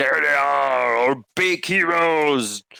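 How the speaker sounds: raspy, high, rough goblin voice calling out. Lucana spots you and points the goblins toward you: Lucana shouting. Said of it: "shouts in common".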